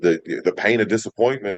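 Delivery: plain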